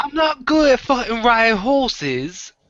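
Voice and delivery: fake, very high British accent with glottal stops. Showing how to fake the accent: put-on british accent with glottal stops. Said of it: "You throw the glottal stop in there".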